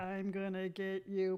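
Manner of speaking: low, slow, clunky evil robot voice. Describing a grooming trimmer, voicing it as a clunky robot. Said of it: "this really clunky robot's like".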